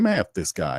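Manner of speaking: ordinary talk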